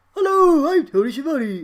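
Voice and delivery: pitched way up and belted out very loud. Trying out an impression for another speaker: Tony Schiavone impression. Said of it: "I'm gonna try and do a Tony Schiavone impression".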